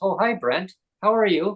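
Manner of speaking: put-on English accent. Retelling a speakerphone call, quoting his doctor greeting him, imitating Neil's English accent. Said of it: "like an English accent".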